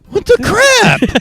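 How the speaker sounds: very high voice, breaking slightly. Showing how the phrase sounds when said with a crack: voice cracking. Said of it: "where your voice cracks a little".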